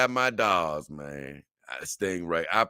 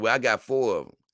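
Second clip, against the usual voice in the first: usual speaking voice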